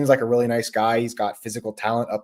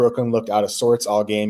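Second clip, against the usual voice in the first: plain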